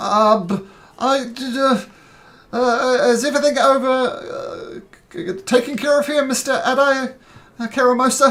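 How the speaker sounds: high, panicky stutter full of false starts. Voicing a guard throwing medical supplies to a wounded man: panicked, stammering. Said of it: "is looking quite panicked".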